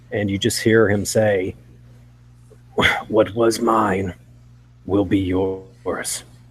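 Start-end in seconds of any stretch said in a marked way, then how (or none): 3.0-6.2 whispering, interrupted by coughs. Voicing a figure who pulls out a carved necklace: coughing and whispering. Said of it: "he's coughing and whispering".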